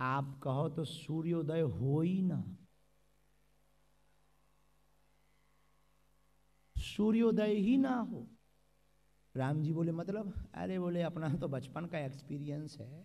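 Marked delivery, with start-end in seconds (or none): 0.0-8.2 soft, hushed, slow confiding murmur, close to ear. Narrating a story, one character speaks to the weeping hero: softly into the ear. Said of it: "बोले धीरे से कान में".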